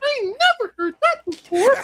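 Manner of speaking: very high-pitched voice, pushed up high. Retelling a funny clip and imitating Uncle Jeff's high-pitched voice.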